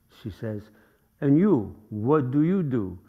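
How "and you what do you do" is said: imitated French accent. Retelling what a woman at a fashion show asked: imitating a French accent. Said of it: "she sounded more French".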